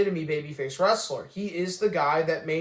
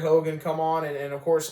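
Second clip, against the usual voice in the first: ordinary talk, nothing marked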